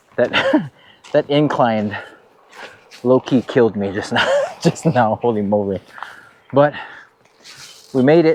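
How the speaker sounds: out of breath, panting between words. Speaker just finished a steep incline on a hike, out of breath. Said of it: "I'm actually winded right now".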